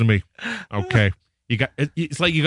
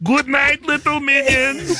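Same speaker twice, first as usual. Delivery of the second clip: very high cartoon villain voice. The speaker shows the voice he does for his children every night: Gru voice. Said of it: "I do this voice for my children every night".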